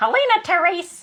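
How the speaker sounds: very high stern disapproving voice. Speaker mimics how mother says the speaker's name when displeased: imitating displeased mother. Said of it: "when I do something that she's not pleased with".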